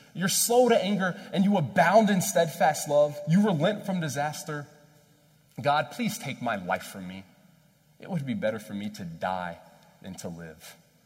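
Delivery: loud, swooping, angry, heated rant. Retelling what Jonah says to God, in a mock-angry voice. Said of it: "he's saying it in this angry voice".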